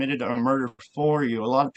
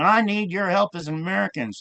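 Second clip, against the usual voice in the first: mock screaming, much higher pitch; 6 semitones higher than usual. Recounting a video of the speaker's father pleading, imitating a scream. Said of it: "he was screaming".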